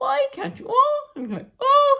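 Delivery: very high, up-and-down, swooping complaining whine. Speaker describes how complainers sound from afar, then imitates them: mock whining complaint. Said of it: "it goes up and down like this".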